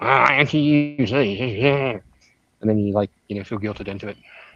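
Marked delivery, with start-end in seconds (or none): 0.0-2.0 slow, condescending tone. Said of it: "and you're like".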